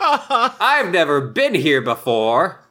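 put-on exaggerated surprise. Retelling how Clayton acts innocent: imitating a showy act. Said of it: "puts on a big show".

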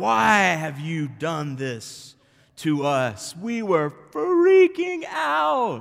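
low growled voice with out stretched out. Retelling the temple story, the speaker voices Mary questioning Jesus, mock growling. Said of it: "she's like growling".

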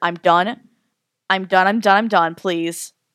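acted scared, frightened pleading voice. Recounting what they said at the end after collapsing, retelling scared pleading. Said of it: "I got so scared by the end".

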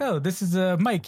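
put-on clumsy New Zealand accent, high, slow, drawn out. Quoting a movie character introducing his friend: bad new zealand accent. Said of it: "we're bad New Zealand accent there".

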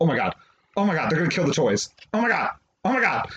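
play-acted frantic, panicked, caught-up outburst. Retelling watching a movie scene: imitating own panic. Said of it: "I was in panic mode".

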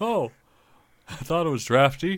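put-on elderly grandpa character voice. Answering the other speaker calling him Grandpa, playing along: old man voice. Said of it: "we're not role-playing yet".

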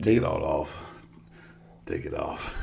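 hushed, slow, breathy murmur, barely a whisper.

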